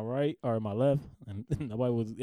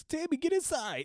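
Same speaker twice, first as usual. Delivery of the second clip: very high-pitched put-on voice.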